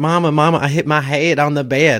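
put-on big, high, thick, heavy Texas accent. Retelling telling his mama as a kid he hit his head, thick texas accent. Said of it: "in this big, thick, thick Texas accent".

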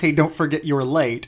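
ordinary talk

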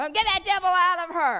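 high-pitched, shrieking scream. Retelling a woman praying over someone she tackled, imitating someone screaming. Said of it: "screaming at her".

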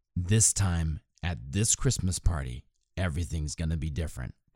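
mock-grave, dead-earnest, very serious, solemn tone. Recalling what they told a woman taking lessons; retelling in a very serious tone. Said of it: "in probably a very serious tone of voice".

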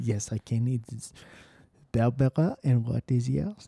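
slow, put-on French woman's accent. Role-playing a first meeting as a French woman: imitating a French woman. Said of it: "my impression of a woman, a French woman named Barbara".

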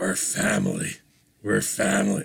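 low, rough, gravelly tough-guy rasp, ground out. Mocking hackneyed movie dialogue: Vin Diesel gravelly voice. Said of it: "I'm trying to do my Vin Diesel gravelly voice".

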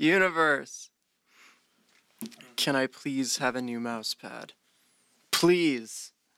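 really begging, earnest pleading tone. Taking a turn in a game, told to really beg: really begging. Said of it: "Really beg".

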